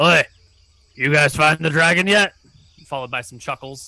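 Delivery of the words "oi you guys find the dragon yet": loud, rude hollering dwarf voice. Voicing a rude dwarf who taunts the party from inside the wall: voicing a rude dwarf. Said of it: "You arrive late in the evening".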